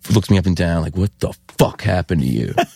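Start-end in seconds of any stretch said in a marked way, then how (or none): 1.0-2.5 voice full of disgust and contempt. Retelling how an older punk reacted on seeing him: imitating a disgusted voice.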